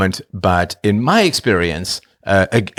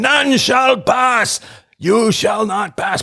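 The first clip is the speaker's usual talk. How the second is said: very high-pitched, grand wizard voice; 12 semitones higher than usual. Describing influencers trying to cross the bridge: Gandalf voice. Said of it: "Gandalf is there like".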